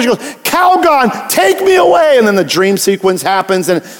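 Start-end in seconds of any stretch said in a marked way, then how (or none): 0.2-2.2 very high, very slow, drawn-out pleading. Retelling a Calgon commercial, the speaker voices its woman, imitating Calgon ad's stressed woman. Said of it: "but she was so stressed".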